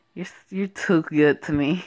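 plain reading voice

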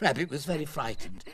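plain

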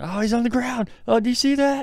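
very high, loud, mock-alarmed sarcastic fuss. Retelling remarks at a soccer game when a player fell: retelling own sarcastic remarks. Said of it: "I started being sarcastic anytime a crew player got touched".

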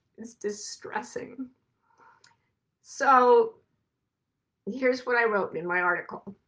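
emotional, breathy, almost whispered. Tell your listeners what you wrote in your article, so emotional. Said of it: "I'm so emotional about this".

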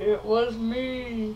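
slow, drawn-out, sinister turtle voice. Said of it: "Steve the Turtle".

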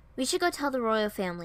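ordinary delivery

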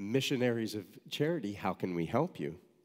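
plain

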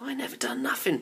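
high, objecting, protesting tone. The youngest Snarget, blamed by another Snarget, denies it: protesting. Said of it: "protested the youngest Snarget".

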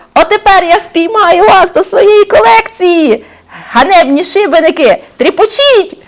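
wild, unhinged, high, frantic yelling. A ghost with a butterfly net chases terrified criminals through a mill, shouting frantically. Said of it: "несамовито кричав".

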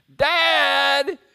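loud, high-pitched shout.

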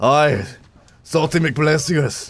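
put-on Scottish accent with a burr on "aye". Joking about feeling salty during a game: put-on Scottish accent. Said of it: "I don't know if that's Scottish or Jon Snow".

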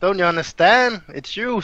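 high, loud laugh full of contempt. Playing a character scolding a jealous husband: laughing scornfully. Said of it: "she laughs".

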